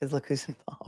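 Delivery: soft, unvoiced, dropped-down whisper.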